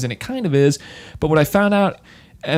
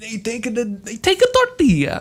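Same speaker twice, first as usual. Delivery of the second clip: put-on Italian accent, higher; 9 semitones higher than usual. Describing how they make the breakfast taco; fake Italian Mario voice. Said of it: "I'm going like Italian".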